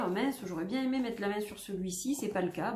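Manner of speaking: normal talking voice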